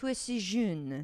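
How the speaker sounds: French with California accent. Answering a request to hear it: french with a california accent. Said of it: "my California accent coming out when I'm trying to do French".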